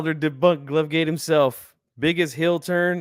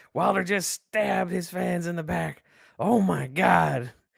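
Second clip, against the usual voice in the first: slower put-on sports commentator style voice; 2 semitones higher, 3 dB quieter than usual. Reacting to a fighter's glove choice, in a Jim Ross voice. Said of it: "In the Jim Ross voice".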